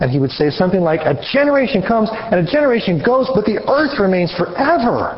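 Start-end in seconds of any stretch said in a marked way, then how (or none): 1.0-5.2 mock heated, angry, pitched-up delivery. Explaining a verse, the speaker imagines Solomon saying it: imitating an angry Solomon. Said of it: "it would have a very angry tone to it".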